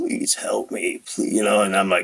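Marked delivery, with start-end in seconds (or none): 0.0-1.3 breathy, pained whispered pleading. Retelling a friend's phone call: imitating a friend pleading in pain. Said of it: "he was in pain".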